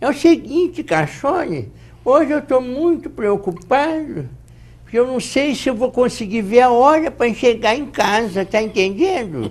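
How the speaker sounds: put-on elderly man voice, high-pitched. Demonstrating different kinds of voices, the speaker does an old man voice. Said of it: "fazer uma voz de velho aqui".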